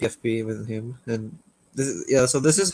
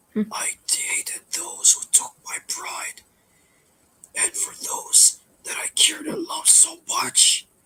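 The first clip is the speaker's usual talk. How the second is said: breathy, whispered voice of an angry spirit. Quoting an animatronic character's line to show how he sounds when angry, angry spirit voice. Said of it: "He sounds like uh an angry spirit".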